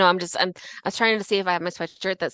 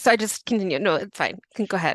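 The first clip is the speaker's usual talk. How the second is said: speech mixed with laughter. Reacting to a grim story and urging the other to continue: laughing while talking. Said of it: "I'm laughing, I'm laughing to stop myself from screaming".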